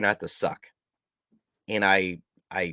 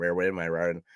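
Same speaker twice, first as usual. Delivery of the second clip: very fast, quick, stumbling, rattled-off delivery. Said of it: "Try saying that fast three times".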